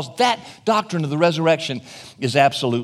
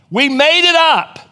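loud, high-pitched, slowed-down mock yell. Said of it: "I yell out".

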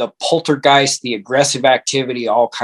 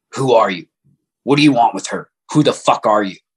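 rough, rasping, raspy voice. Retelling a voice heard in the ear at night: imitating a raspy, rough voice. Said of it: "It was real raspy and rough".

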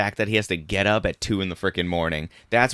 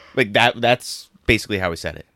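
usual speaking voice

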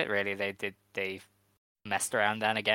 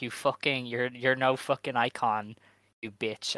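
imitated angry wrestler voice; 2 semitones higher than usual. Retelling a wrestler's pre-match insult to her opponent: imitating Rina insulting angrily. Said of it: "called Mayu an old bitch and was like".

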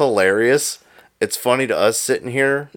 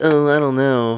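meek, wussy, wimpy little voice; 3 semitones higher than usual. Teasing the other speaker about how he first answered, imitating Joe's wimpy voice. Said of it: "I sound like a wuss".

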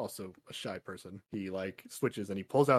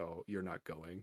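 put-on very sad voice, much quieter; 4 semitones lower, 14 dB quieter than usual. Recapping a scene where her dad answers Kamala, imitating a very sad voice. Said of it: "a very sad voice".

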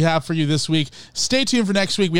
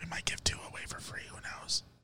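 whispering, quieter. Teasing a free t-shirt giveaway to listeners: whispering. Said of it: "Why are we whispering?".

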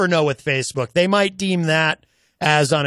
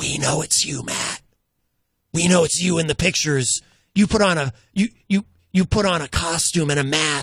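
put-on whisper. Retelling a phone call from an unknown caller: imitating someone whispering. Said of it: "they're whispering to me".

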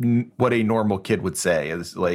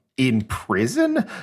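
put-on utterly thrown, confused, disbelieving tone; 4 semitones higher than usual. Retelling a scene from a show: imitating a baffled question.

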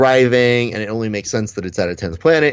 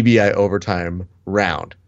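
ordinary talk

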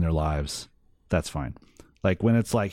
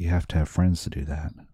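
lower, put-on melancholy voice; 3 semitones lower than usual. Retelling a line from a wrestling scene, imitating MJF's melancholy voice. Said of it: "the melancholy in M J F's voice".

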